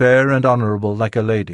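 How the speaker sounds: plain reading voice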